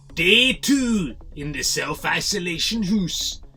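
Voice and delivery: poorly done put-on announcer accent. Opening a video clip, attempting the Big Brother narrator accent. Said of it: "trying to do the Big Brother thing, but, uh, not that good with that accent".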